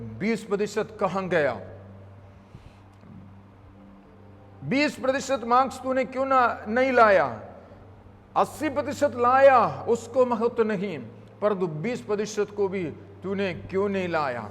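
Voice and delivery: ordinary talk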